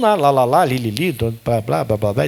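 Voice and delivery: very low, deep nonsense-syllable babble. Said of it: "Não vou nem ficar imitando".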